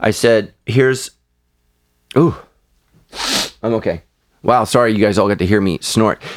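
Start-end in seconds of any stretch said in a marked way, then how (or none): 0.0-4.0 stifling a sneeze, slower. Telling a story, interrupted while trying not to sneeze, holding back a sneeze. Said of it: "I'm trying not to sneeze".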